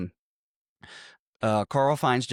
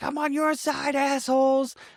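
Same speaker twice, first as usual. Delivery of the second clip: very high-pitched, put-on, exasperated, fed-up yell. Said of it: "he's like".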